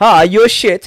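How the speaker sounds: put-on German accent. Imitating German fans telling a performer what they think, put-on accent. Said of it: "I don't know what accent that was".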